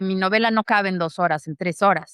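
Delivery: plain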